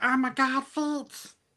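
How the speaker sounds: high, drawn-out creature voice. Retelling how everyone reacted to the feats: Gollum impression. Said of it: "Was that a Gollum impression?".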